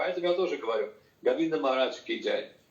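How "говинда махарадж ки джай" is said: normal talking voice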